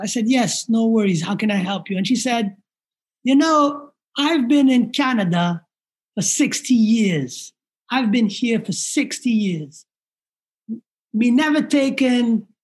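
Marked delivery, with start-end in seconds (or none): 3.2-12.4 thick Jamaican lilt, put-on elderly woman voice. Like an older woman who has lived abroad for decades, half amused and half aggrieved, speaking in a broad Caribbean lilt. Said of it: "my Jamaican accent sucks, so I'm going to try my best".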